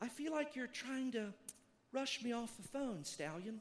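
honey-sweet, sugary, sweetest voice. Retelling what a woman says to him on the phone, imitating a sweet voice. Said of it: "and just the sweetest voice".

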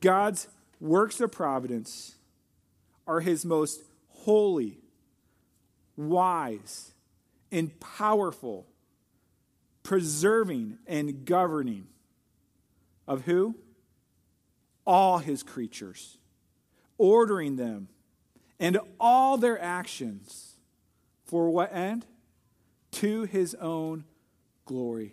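very slow, unhurried reading. Reading the Westminster Larger Catechism's answer on providence aloud, reading very slowly. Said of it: "I'll read it slowly".

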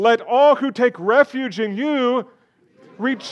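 joyful, jubilant, very high and very loud. Leading a group through a scripture reading, showing how to say it, joyful. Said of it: "Say it joyfully".

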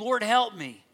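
put-on pleading tone. Speaker retells a kneeling woman's plea to Jesus, acting out a plea. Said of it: "she's just pleading".

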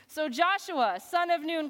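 ordinary delivery

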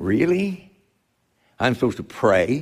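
sarcastic tone with put-on disbelief. Reacting to the point about prayer with put-on sarcasm. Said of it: "Pardon the sarcasm".

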